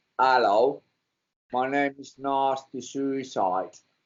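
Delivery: put-on slow, unhurried English accent. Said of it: "with his, like, English accent".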